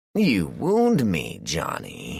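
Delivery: very slow, patronizing, swooping, drawn-out condescension. Replying to a man who called him an imposter, condescending. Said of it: "Thornton said in a condescending voice".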